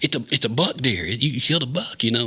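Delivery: thrilled, excited, fired-up, worked-up voice. Retelling his dad running back after he shot a deer, mock-excited, fired up. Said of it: "he's fired up".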